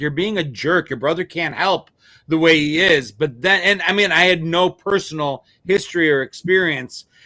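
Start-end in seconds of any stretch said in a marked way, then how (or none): none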